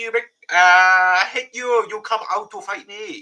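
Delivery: put-on Chinese accent, loud, high, pushed hard. Speaker who voiced Yorichi doing the character's lines, Yorichi's put-on Chinese accent. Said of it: "now he now he's got a Chinese voice".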